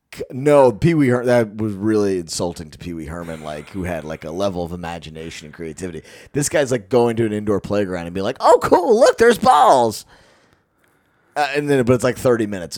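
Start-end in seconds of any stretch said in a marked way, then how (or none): 8.4-10.0 squeaky, very high, swooping goofy voice throughout. Mocking a video performer at an indoor playground: imitating a goofy voice. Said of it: "points at shit that's in a firehouse in a goofy voice".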